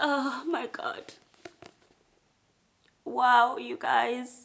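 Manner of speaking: tearful, crying while talking. A reader talks to viewers about a book, crying while talking. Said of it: "why I'm crying over a book".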